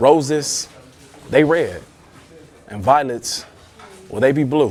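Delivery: slow, broken up by little pauses between phrases. Showing how pauses change the meaning of a poetry line: slow with pauses between phrases. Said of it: "just that little pause, that slow down, that tone inflection".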